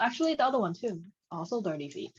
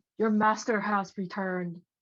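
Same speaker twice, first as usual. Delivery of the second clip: put-on yelling voice; 2 semitones higher than usual. Voicing a suit of armor to fool the minions: mimicking the yelling guard's voice. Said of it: "I'm trying to, like, fo-, fo-, follow the voice".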